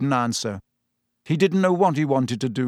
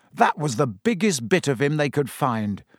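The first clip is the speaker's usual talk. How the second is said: ordinary delivery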